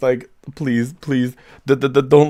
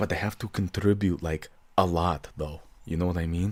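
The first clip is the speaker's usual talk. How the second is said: hushed, half-whispered voice; 9 semitones lower, 11 dB quieter than usual. Voicing a character who half-whispers a point to someone else: half-whispering. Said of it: "I whisper this to someone else".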